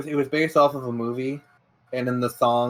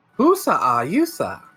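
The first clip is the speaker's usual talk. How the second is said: put-on alien creature voice, higher; 5 semitones higher, 3 dB louder than usual. Invoking Jar Jar to tease another speaker: Jar Jar Binks voice. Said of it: "I invoke Jar Jar".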